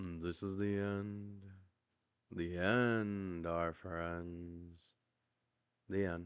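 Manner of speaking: sorrowful monotone drone, end stretched out. Signing off at the end of the show in a monotone, sad voice. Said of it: "this is our monotone, sad voices for the end".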